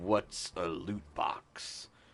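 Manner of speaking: quiet slowed-down voice. Acting out his reply when they want him for a commercial, Danny Trejo impression, little lower. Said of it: "making your voice a little lower".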